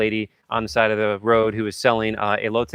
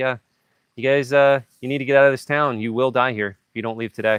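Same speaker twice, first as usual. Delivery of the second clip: put-on nonchalant, casual, kindly granny voice; 2 semitones higher than usual. Retelling a woman's warning to leave town, imitating a nonchalant grandmotherly tone. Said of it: "like grandmotherly kind of way".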